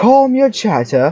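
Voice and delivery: mock stern scolding, slow, high and drawn-out.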